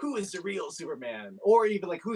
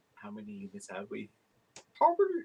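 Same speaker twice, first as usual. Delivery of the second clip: very low voice, oddly swooping pitch; 8 semitones lower than usual. Retelling a man's question, the speaker redoes it in a Yoda voice. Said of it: "I can't even do the Yoda voice right now".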